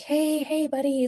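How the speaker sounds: acted overly sweet voice. Retelling their dad wedging himself in between them, acting out a very nice tone. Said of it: "like just being like the nicest".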